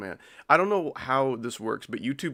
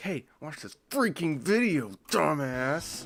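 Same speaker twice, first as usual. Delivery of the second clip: mock snide, mean jeering tone with raised pitch; 5 semitones higher than usual. Voicing YouTube telling the viewer to watch a video: put-on mean YouTube voice. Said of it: "I said it mean style".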